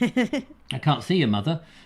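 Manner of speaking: usual speaking voice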